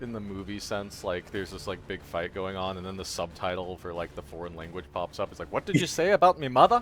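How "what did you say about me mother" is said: put-on Irish-accented voice. Imagining a movie fight with subtitles popping up, the speaker voices a line: Irish accent. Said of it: "all in uh, Irish accents, right?".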